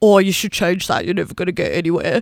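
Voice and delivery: voice pushed way down, deep and dropped. Imitating the wrong people reacting to the name Worm Girls, in a lowered voice. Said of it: "Notice the drop in the pitch of my voice".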